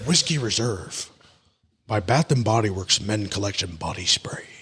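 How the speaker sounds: faint mock Irish accent, low. Reviewing a men's body spray, trying a voice, weak Liam Neeson impression. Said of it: "it need a little bit more accent".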